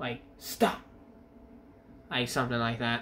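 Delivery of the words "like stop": slightly raised voice, a little angry. Showing how to tell an animal to stop, with a raised voice, a bit angry. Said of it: "raise my voice a little bit at the animal".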